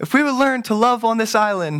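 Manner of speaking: nervous, very high-pitched voice. Recalling closing a translated speech, imitating own nervous high-pitched voice. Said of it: "I was closing my last statement in my high-pitched voice".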